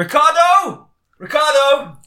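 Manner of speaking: very high, loud calling yell.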